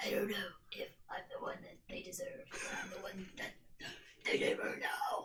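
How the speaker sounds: barely audible, breathy whisper. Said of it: "Listen to the sound of a man with no voice".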